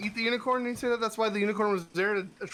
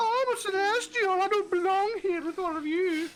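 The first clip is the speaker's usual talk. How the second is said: put-on Swedish-accented unicorn voice, much higher; 11 semitones higher than usual. Players mock an uppity unicorn by voicing it: Swedish-accented unicorn voice. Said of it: "The Swedish Swedish unicorn".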